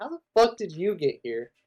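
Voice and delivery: indignant, pissed-off angry outburst with swooping pitch. Retelling how the characters reacted to Jake: imitating pissed-off people. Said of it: "They're all pissed off about it".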